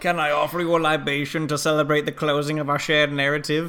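put-on stiff German accent.

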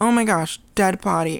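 put-on shocked voice. Retelling the character's reaction on finding the body: imitating Norman being shocked.

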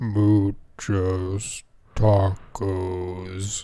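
very deep, low put-on dog voice. Voicing a dog after being dared to: deep dog voice. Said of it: "I trained him to have a real deep voice".

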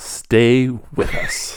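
loosely done put-on voice with swooping pitch. Asked to do an Ira Glass voice, doing the Ira Glass voice. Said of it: "Will you do your Ira Glass voice?".

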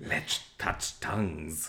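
low, slow, soft, hissing snake voice. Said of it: "do you speak Parseltongue?".

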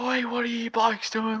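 mock angry bloke yelling, very high. Retelling how a neighbour screamed at them at night: imitating a man screaming.

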